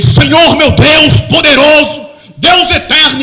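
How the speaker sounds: loud, drawn-out acted shouting. Retelling a man praying on the mountain: imitating a man shouting a prayer. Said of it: "e gritando".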